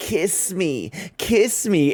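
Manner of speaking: strange, high, very slow, drawn-out creature voice. Retelling a show scene where the curse speaks: weird curse voice. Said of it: "in that weird curse voice that they use".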